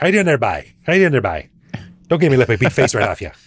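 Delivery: Newfoundland accent. Asked by the host to do a Newfie accent, Newfoundland accent. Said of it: "can you do a Newfie accent for us".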